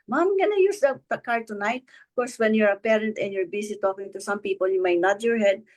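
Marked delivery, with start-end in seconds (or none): 0.1-1.8 mock high calling out from afar. Retelling her son announcing something from across the room; calling from across the room. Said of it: "says from afar, across the room".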